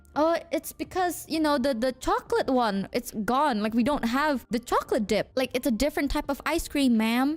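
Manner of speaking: usual speaking voice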